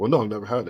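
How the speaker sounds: ordinary talk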